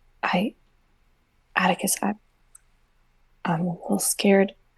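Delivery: hushed, low and quiet voice. Roleplay, sidling up to Atticus and speaking in a low, quiet voice. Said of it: "quietly sidle up to Atticus in a low voice, like".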